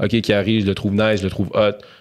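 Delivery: ordinary talk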